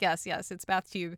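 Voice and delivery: ordinary talk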